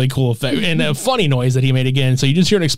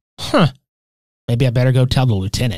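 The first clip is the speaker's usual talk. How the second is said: put-on casual, unbothered, offhand, nonchalant tone; 2 semitones lower than usual. Retelling how a cop reacts to an explosion: imitating a nonchalant cop. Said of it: "he just very nonchalantly".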